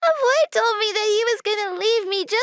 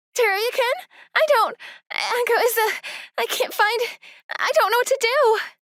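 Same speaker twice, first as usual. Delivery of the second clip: frantic, panicked, sentences broken off mid-thought. Calling to say echo is missing, panicked. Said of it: "calm down. Take a deep breath".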